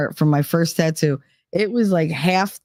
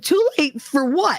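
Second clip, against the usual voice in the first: voice shooting up to a high-pitched squeak; 8 semitones higher than usual. Retelling answering a man at the mirror, imitating own high-pitched voice. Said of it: "that's how my voice went. It went high pitched".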